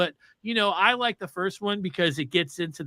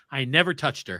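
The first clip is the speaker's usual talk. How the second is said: mock deadpan delivery, lower pitch; 6 semitones lower than usual. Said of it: "looks him dead in the face".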